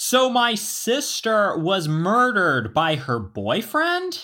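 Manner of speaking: put-on very loud, drawn-out, offhand matter-of-fact tone. Retelling a man walking past his airport gate: imitating a man talking very loudly. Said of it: "very loudly saying".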